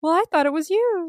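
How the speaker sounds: fake innocent tone. Retelling Namo's answer to Ak: imitating Namo's fake innocence. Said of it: "he could have been faking that".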